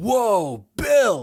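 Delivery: heightened stoner surfer-dude voice. Describing an old movie role, the speaker quotes the actor: Keanu Reeves surfer-dude voice. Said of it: "heightened California surfer dude stoner kind of stereotypes".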